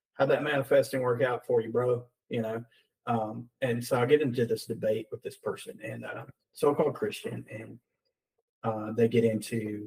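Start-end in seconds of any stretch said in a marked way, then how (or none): none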